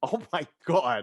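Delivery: appalled, offended, horrified, disgusted gasp. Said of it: "Just the most horrified".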